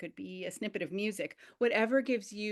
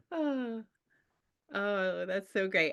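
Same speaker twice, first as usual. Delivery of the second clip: happy, pleased sigh, drawn out very slowly. Thanking the group for sharing their little stories, with a happy sigh. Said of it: "[happy sigh]".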